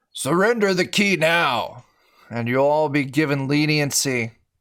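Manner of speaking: rough military commander voice. A game narrator voices an army general calling down to the players, gruff general's voice. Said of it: "He calls down in a gruff voice".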